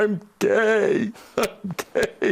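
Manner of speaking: play-acted, shrill, very high, slow, drawn-out sobbing wail. Retelling Philip falling on his knees: imitating Philip crying. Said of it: "he falls down on his knees crying".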